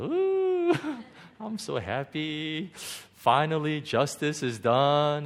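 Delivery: smug, gloating glee.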